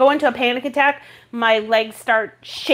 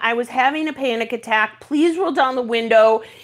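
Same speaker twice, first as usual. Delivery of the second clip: usual speaking voice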